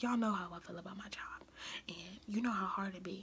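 hushed whisper. Telling listeners about their job as if others could hear, whispering. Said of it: "I don't know why I'm whispering".

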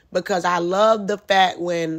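ordinary talk

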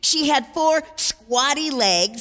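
ordinary delivery

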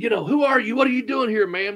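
aggressive, confrontational, acted out. Retelling how an armed man confronted a visitor: imitating someone aggressive. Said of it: "the guy was kind of aggressive".

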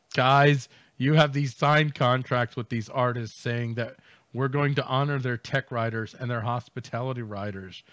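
ordinary delivery

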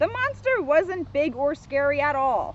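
ordinary delivery

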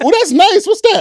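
put-on squealing, very loud, very high girly chatter. Imitating how girls talk in the bathroom: mimicking girl talk. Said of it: "you know how girls talk in the bathroom".

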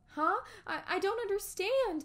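very high, trembling, shaking, frightened voice. The narrator answers Karen after being told they will soon join them, voice shaking. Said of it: "my voice shaching".

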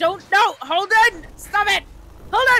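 high, loud panicked yelling.

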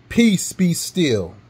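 put-on, all-out, high yell at full volume. Speaker retells shouting a phrase while driving through a storm: retelling a loud yell. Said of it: "in my loudest voice, I just yelled it".

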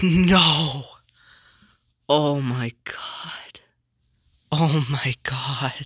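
shaken, upset, shaking voice. Streamer reacting during a game, shaken and upset. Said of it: "I'm shaking".

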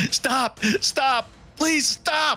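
yelling out. In a role-playing game, a player speaks as his character, screaming. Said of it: "I'm screaming".

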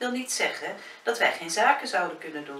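ordinary delivery

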